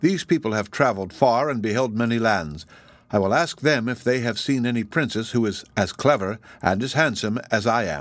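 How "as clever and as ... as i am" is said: ordinary delivery, nothing marked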